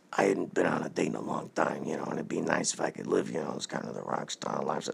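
soft, secretive, just-between-us whispered aside. Telling a buddy a secret plan in confidence, whispering. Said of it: "What are you two whispering about?".

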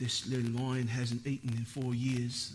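attempted British nature-narrator accent. Talking about nature shows, imitating their narrator in an attempted british nature-narrator accent. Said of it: "Is that a good British accent?".

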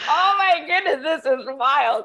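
loud, laughing disbelief.

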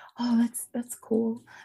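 high, slow whisper. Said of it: "Oh, you whisper Charlotte?".

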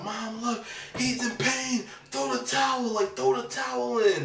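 high, desperate, pleading whine.

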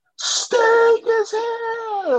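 very high call, held and drawn out long. Announcing big wrestling news: Tony Schiavone voice. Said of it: "my Tony Schiavone voice".

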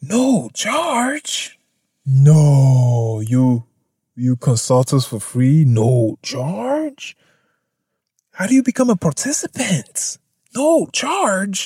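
mock astonishment, slow, swooping, "no" drawn out. Reacting to a company offering consultations at no charge: sarcastic mock amazement. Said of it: "I'm being sarcastic".

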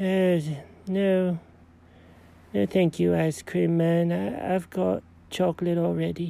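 talking while asleep. Being picked up by the collar, the character talks in his sleep. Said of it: "Are you having an ice cream dream?".

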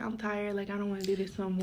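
plain

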